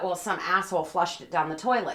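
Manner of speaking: ordinary talk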